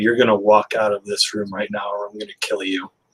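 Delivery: dead-calm, quiet, hushed, low menacing voice. Recounting what they told someone to make them leave the room, retelling a very calm quiet voice. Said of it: "in the calmest voice that you can imagine".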